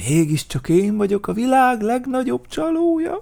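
joyful exclamation, crying out, pitch rising. Narrator reading a story voices Vacskamati: cries out happily. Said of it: "rikkantott boldogan Vacskamati".

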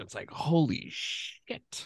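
slow, hushed whisper.

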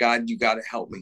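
ordinary delivery

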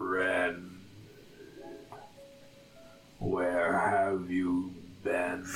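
deep, low, slow, drawn-out malevolent voice. A storyteller voices a presence entering the listener's mind, ancient malevolent Kraken voice. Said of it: "the ancient and malevolent demigod like voice of the Kraken".

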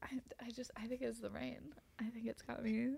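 soft, hushed, unvoiced whisper.

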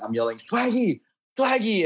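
acted yelling. Recounting pregame at a Lakers game, calling out to a player: retelling a yell. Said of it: "I'm yelling".

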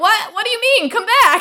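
very high, loud yell. Retelling a movie scene, imitating Loki yelling after someone. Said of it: "Loki's yelling after her".

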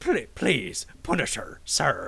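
put-on Irish accent. Retelling a line from an interrogation scene, imitating McGinty's Irish accent. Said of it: "his Irish accent".

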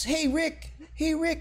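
high, eager calling out.

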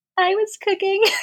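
meek, tiny little voice, very high. Retelling admitting to a man who asked who was cooking, in a little voice. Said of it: "in my little voice".

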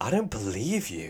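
earnest, heartfelt delivery full of feeling. Imitating a child actor's line from a movie: imitating an emotional child's line. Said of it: "he just sounds so emotional".

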